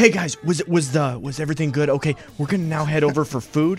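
put-on whispering. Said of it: "he would just whisper to us things".

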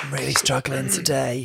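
rough, croaky, put-on sick-sounding voice. Imitating a contestant's calling-in-sick-to-work voice. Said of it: "the calling in sick to work voice".

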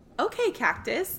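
regal, very calm, unhurried, hushed near-whisper. Voicing Brina as the others try to leave the room: Brina, very calm. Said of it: "very calmly".

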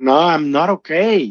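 slow, mild, drawn-out, despairing anguished cry. Recalling walking into the apartment and being asked if okay, retelling own scream. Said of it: "And I just screamed like".

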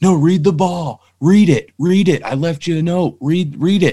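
put-on high, loud scream, every word hammered. Retelling shouting through a glass protector: imitating Clint screaming. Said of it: "So he's screaming".

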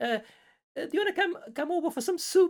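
put-on very high-pitched elderly lady voice. Retelling a game encounter where a spaceship hails: imitating an old lady. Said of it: "like an old lady talking".

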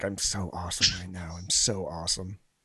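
smug, self-satisfied, gloating tone. Acting out what the character thinks on walking in, imitating a smug character. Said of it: "he was so smug when he walked in".

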